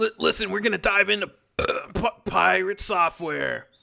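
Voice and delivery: rough, creaky, rasping character voice. Introducing a talk on pirate software, done in Rick voice. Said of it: "I'll do it in uh in in, in Rick's voice".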